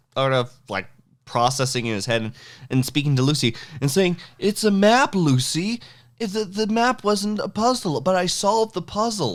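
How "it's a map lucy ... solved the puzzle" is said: very high, slow, puzzled voice. Quoting a scene from Twin Peaks: Andy impression. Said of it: "pretty good Andy impersonation".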